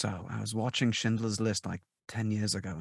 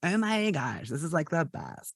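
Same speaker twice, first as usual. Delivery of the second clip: high, flamboyant, over-the-top gushing hairdresser voice; 8 semitones higher than usual. Showing the stereotype they didn't want to do: stereotypical flamboyant hairdresser voice. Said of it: "stereotypical like you know like flamboyant hairdresser".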